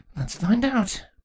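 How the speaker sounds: very high-pitched mumble under the breath. A queen responds after a guard's shout in her mind, muttered. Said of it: "Chrysalis muttered".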